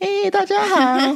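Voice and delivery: put-on very high, squeaky, cutesy baby-doll voice. Demonstrating the kind of voice she dislikes, in a high squeaky baby voice. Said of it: "那种娃娃音".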